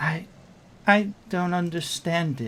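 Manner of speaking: very soft, tender, gently spoken voice. Narrating a blood-soaked woman who looks at you: very soft voice. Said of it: "she says in a very very soft voice".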